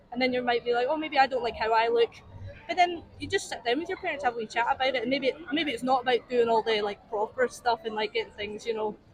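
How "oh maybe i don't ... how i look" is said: ordinary talk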